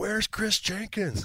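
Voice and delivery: very high, shouted yell. Retelling a call made at the end of a quarter: imitating own past yell. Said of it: "I yelled out".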